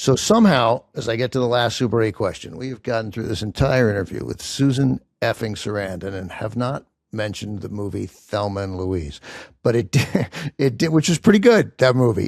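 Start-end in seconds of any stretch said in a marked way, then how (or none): 11.1-12.3 light laugh while speaking. Interviewer to the guest before the final wildcard question, chuckling.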